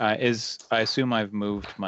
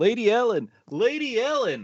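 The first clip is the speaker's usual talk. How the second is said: very high, swooping calling-out holler; 13 semitones higher than usual. Running as fast as possible and calling ahead, yelling.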